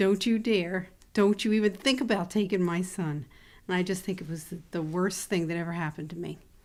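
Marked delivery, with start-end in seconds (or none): 0.0-3.3 loud, all-out scream at top of lungs. Retelling screaming at God after coming home: imitating own screaming. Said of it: "I screamed at the top of my lungs".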